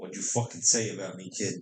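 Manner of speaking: put-on angry voice. Speaker imagining a call from Bill Belichick, imitating angry Bill Belichick. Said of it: "he's like".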